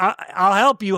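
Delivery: ordinary talk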